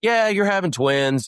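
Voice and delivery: acted offhand casualness, very high pitched. Retelling the ultrasound lady's reply to the speaker and his wife, mimicking her nonchalance. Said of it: "the lady's just all nonchalant".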